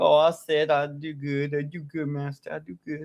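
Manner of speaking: mocking, fawning, servile lapdog voice. Mocking how another speaker answers someone: mocking imitation of Liliana as a lapdog. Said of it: "be a good little transgender lapdog".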